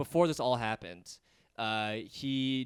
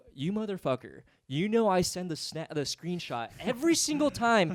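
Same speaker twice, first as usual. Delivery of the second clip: put-on furious tone, higher; 6 semitones higher, 4 dB louder than usual. Retelling what was said in mind to a late payer: imitating own angry retort. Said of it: "I was fucking pissed".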